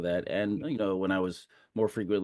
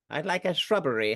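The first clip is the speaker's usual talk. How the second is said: clumsy put-on British accent, pitched up; 7 semitones higher than usual. Quoting a famous line about a shrubbery in a bad british accent. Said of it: "that was not a good accent".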